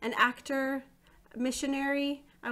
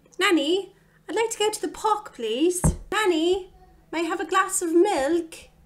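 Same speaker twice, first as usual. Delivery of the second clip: very loud, high, put-on British accent; 7 semitones higher, 10 dB louder than usual. Addressing the other person as a pretend nanny, put-on British accent. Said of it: "I'm going to do it in a British accent and pretend that you're a nanny".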